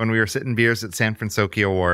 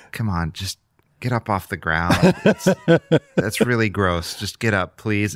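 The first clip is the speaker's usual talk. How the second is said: mock beaten-down, resigned, worn-out, defeated tone. Retelling a dad asking the girl to get up off the ground, imitating a defeated dad. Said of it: "in the most defeated voice I've ever heard".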